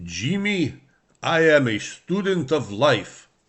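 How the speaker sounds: put-on spoken with a Polish accent. Quoting what an old man used to say to him, in a Polish accent. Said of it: "he had a Polish accent".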